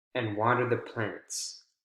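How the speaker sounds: pitch drops down at the end on plants. Intonation lesson on lists, last list item: falling pitch on plants. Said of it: "that last item, you want to make sure you have falling intonation".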